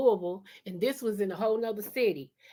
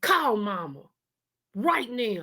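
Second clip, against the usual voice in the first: play-acted angry, irritated, pissed-off voice. Speaker retells what their brother said on finding them at the door, imitating an angry brother. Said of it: "He was pissed".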